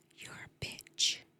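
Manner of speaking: sweet, soft whisper, right into the ear. Retelling what a patient said during an IV flush: imitating a sweet whisper. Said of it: "they whispered in my ear just so sweetly".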